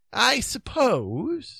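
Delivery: unsure, doubting, uncertain tone. The king answers a companion who accuses him of abandoning them, doubtful. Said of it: "he said doubtfully".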